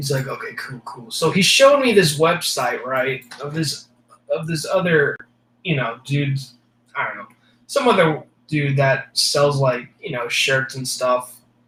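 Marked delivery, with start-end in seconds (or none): 0.3-1.1 hushed, breathy, whispered big guy voice. Retelling a job talk with a big buff gym dude: imitating the big buff dude. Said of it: "this is pretty much my impersonation of the dude".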